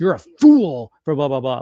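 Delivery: aggressive, loud, swooping delivery full of attitude. Describing how the wrestler would sound on SmackDown: aggressive Drew McIntyre impression. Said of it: "way more attitude, way more aggression".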